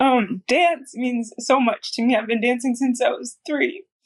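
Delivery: crying while speaking, voice breaking. Answering a question about herself and her dancing, crying with her voice breaking. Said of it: "I'm crying again".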